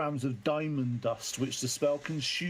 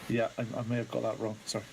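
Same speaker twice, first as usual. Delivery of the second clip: put-on hesitant, apologetic, sheepish tone; 5 semitones lower than usual. Retelling how she admitted getting something wrong: mock-sheepish apology. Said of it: "all sheepishly like".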